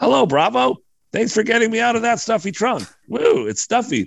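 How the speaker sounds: very high little wooden ventriloquist dummy voice. Reading a script aloud, voicing the ventriloquist dummy: high-pitched ventriloquist dummy voice. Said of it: "in a high-pitched voice".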